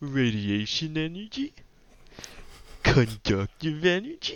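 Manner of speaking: very snooty put-on scientist voice, drawn-out, sing-song. Making science jokes as a scientist, in a snooty scientist voice. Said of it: "That would be me as a scientist, just in the most snooty way possible".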